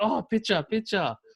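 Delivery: poor imitation Thai accent, high. Recalling people on the streets in Thailand asking for a picture, in a very bad Thai accent. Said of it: "that's my very bad Thai accent".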